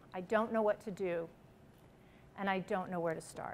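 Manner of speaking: very quiet, hushed, spoken very softly, desperate. Retelling what he finally said after a long silence, quoting him very quietly. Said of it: "he just very quietly said to me".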